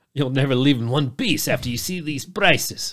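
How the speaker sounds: put-on Eastern European accent. Joking as a seller of cheap rooms, Eastern European accent. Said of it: "The fuck kind of accent was that anyway?".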